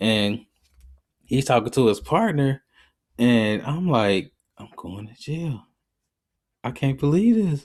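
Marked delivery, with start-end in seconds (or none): 4.6-7.6 acted-out, panicked voice. Retelling being stopped by a cop, fearing jail: retelling own panic. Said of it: "I'm panicked at this point".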